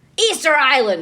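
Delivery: mock punchy, in-your-face, brash TV documentary-narrator voice. Retelling how a documentary opens: imitating a shouting documentary narrator. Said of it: "Stop shouting at me".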